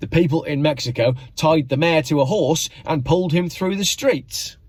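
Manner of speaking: ordinary talk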